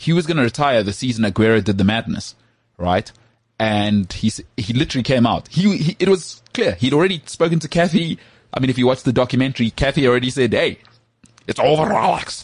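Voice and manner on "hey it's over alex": put-on slow, high-pitched, lilting Scottish accent. Quoting Kathy telling Alex it is over: Scottish accent. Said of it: "That's a Scottish accent".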